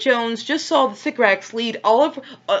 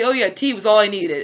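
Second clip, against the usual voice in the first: usual speaking voice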